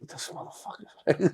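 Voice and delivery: muttered whisper under the breath.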